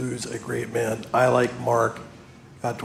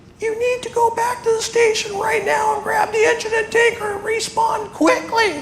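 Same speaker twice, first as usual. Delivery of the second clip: raised, strained, high, squeaky cartoon voice; 7 dB louder than usual. Retelling a radio call heard while watching a column of smoke, in a strained Mickey Mouse voice. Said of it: "In this Mickey Mouse strained voice".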